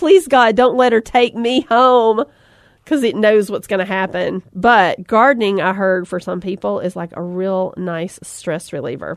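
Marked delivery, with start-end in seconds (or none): 0.0-2.2 put-on pleading yell, higher. Voicing a flower the speaker imagines crying out, mock yelling as the flower. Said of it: "It's just yelling".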